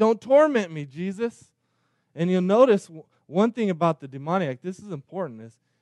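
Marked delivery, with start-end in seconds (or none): 0.0-1.4 mock begging voice, high-pitched and desperate. Retelling the demoniac pleading with Jesus: imitating someone pleading. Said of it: "he's begging, he's pleading".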